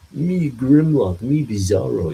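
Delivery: slow, loud, dim-witted voice. Suggesting how a dumb Bizarro could talk in a comic story: Grimlock-like Bizarro voice. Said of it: "he had this, like, Grimlock-like voice".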